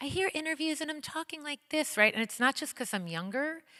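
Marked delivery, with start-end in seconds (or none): 0.0-2.1 high, eager, accommodating, keen-to-please voice. Speaker recalling how they sounded in old interviews, imitating own people-pleaser voice. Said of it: "That's the people pleaser voice".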